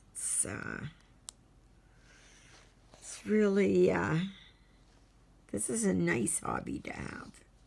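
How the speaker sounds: husky, hoarse voice. Talking about a hobby they are making progress with, in a husky voice. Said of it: "Sorry for my husky voice".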